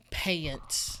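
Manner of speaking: Texas drawl, "pants" stretched to two syllables. Greeting a chat viewer and stretching the word: Texas drawl, two-syllable pants. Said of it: "in Texas, our one-syllable words are actually two".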